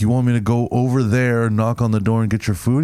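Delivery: ordinary talk, nothing marked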